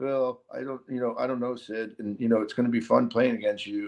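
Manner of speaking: low put-on monotone. Acting out Connor Bedard talking to his idol Sidney Crosby before the first game, a monotone Connor Bedard impression. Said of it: "And monotone is an MF".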